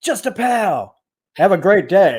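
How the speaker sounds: put-on American accent, sing-song. Retelling a man putting on an American accent on the phone; fake American accent. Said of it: "him doing his American accent".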